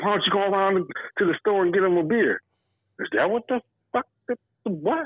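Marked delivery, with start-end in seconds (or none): 0.0-2.4 put-on heavy Southern drawl, higher. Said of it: "he said".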